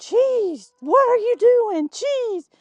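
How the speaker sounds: shrill, very high, desperate yelling. Retelling being attacked by a goose, imitating her own yelling. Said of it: "I was just yelling".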